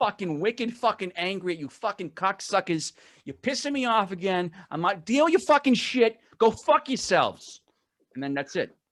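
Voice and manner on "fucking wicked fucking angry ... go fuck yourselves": slow ranting in a Boston accent. Showing the other hosts how he'd rant at them: Boston rant. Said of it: "That's a Boston rant".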